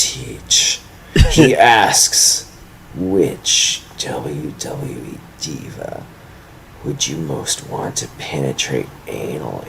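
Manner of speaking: low voice with open contempt. Reading out a question someone sent in: contemptuous reading. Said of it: "to hear the contempt in my voice".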